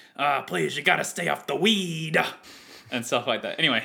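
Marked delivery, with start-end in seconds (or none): 0.2-2.2 high, rough, raspy ranting delivery. Quoting a sports commentator's famous rant: Stephen A. Smith impression. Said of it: "he, like, says".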